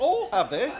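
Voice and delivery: very high-pitched, feigned, put-on surprise. Retelling a reply given to someone, with put-on surprise, a bit higher. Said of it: "I put surprise in my voice, like, ... A bit higher than what I was needing".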